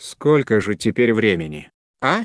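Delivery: ordinary delivery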